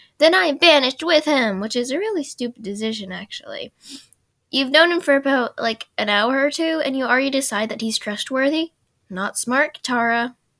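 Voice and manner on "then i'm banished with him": loud, high, mad, heated angry outburst. Recapping an episode where Katara chooses banishment with Aang, imitating an angry Katara. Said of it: "she gets all mad and goes".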